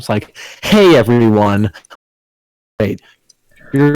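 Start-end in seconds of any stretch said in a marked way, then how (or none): 0.6-1.7 put-on, fake cheerful voice. Mocking the YouTuber intro persona: mock fake YouTuber enthusiasm. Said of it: "the fake enthusiasm".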